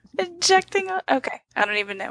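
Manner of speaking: high, tearful talk, crying with laughter. Reacting to edits someone made to the Joy page, crying with laughter. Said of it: "I'm seriously crying".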